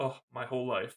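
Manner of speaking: usual speaking voice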